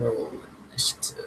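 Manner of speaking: low, breathy, hushed whisper. The narrator voices a man beside four figures holding bloody knives: low voice. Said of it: "in his low voice".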